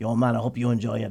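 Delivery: low put-on Mexican accent in a male voice. Retelling a man's voice heard as Minnie Mouse leaned in: Mexican guy's accent. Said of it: "I hear this Mexican guy's voice go".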